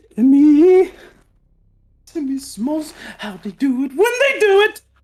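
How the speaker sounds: high, loud acted freak-out at top of voice. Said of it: "I couldn't do this accent in a freaking out kind of way".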